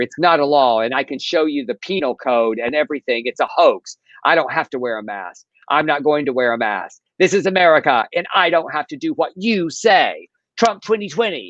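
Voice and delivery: whiny, indignant, complaining rant. Retelling a customer's rant about masks in a viral clip: imitating a whining customer. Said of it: "She whines further".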